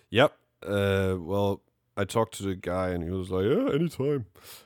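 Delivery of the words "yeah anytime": goofy cartoon voice, much higher. Quoting a guy he asked about performing, Goofy-like voice. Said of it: "why do you sound like Goofy?".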